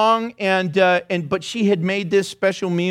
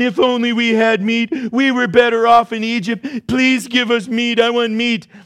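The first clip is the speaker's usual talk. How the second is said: acted crying, pleading; 4 semitones higher, 4 dB louder than usual. Voicing God quoting the people's complaint, imitating someone crying. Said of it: "I heard you crying".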